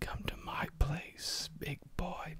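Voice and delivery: very soft, gentle, seductive whisper. Retelling a voice in his dream whispering to him: retelling a gentle whisper. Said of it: "the voice was whispering something gently".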